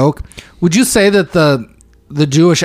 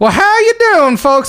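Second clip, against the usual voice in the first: very high, off-sounding put-on American accent; 14 semitones higher than usual. Describing people in a bar doing American accents, put-on American accent. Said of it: "people doing American accents".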